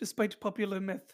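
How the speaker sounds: horrible fake British accent. The speaker quotes what he says: horrible British accent. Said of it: "I again do a horrible British accent".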